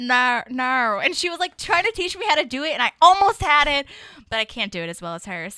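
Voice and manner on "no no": put-on Australian accent on "no". Speaker shows how a former officemate says no, in an Australian accent. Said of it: "she can say no in an Australian accent really well".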